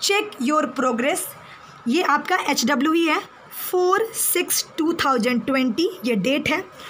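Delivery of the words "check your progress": very slow, clear, careful reading pace. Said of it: "मैं धीरे धीरे भी बोलूँगी".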